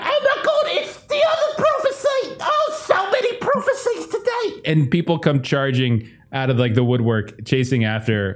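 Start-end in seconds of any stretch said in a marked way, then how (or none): 0.0-4.7 very high-pitched, crowd-like shouting. Voicing townspeople who see a fire-breathing dog: townspeople shouting. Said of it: "people shouting out".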